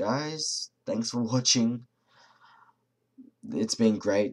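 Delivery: tired voice with frequent pauses. A video maker signs off to his viewers, tired, pausing a lot. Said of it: "I'm just pausing a lot because I'm tired".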